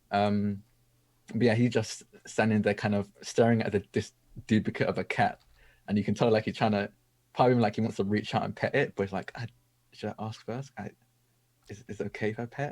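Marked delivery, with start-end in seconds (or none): 9.3-12.7 hushed, soft half-whisper under the breath. Voicing a character reaching out to pet a ghostly cat: half-whispering under his breath. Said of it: "He's just kinda whispering this under his breath".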